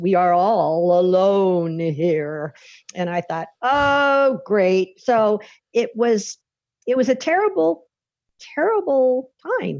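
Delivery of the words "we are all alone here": eerie haunting voice, lower and slower. Quoting what he said back to your shouted offer, in a haunting voice. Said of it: "in this kind of haunting voice".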